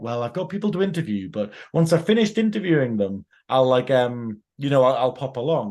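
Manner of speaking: normal talking voice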